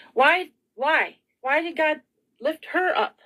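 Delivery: flustered, emotional, high-pitched frazzled voice. Speaking to everyone, the speaker admits being frazzled and crying: frazzled. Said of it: "I'm so frazzled right now".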